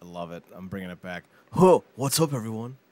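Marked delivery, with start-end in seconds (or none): 1.5-2.7 loud surfer dude bro voice. Opening a video by greeting everyone, in a surfer bro voice. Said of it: "It's that surfer bro, dude bro voice".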